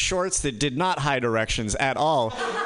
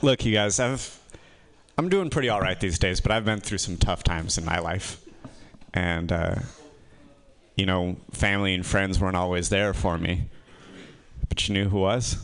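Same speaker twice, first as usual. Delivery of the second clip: low, mock heartfelt, earnest tone. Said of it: "I'm gonna have trouble not doing this sarcastically".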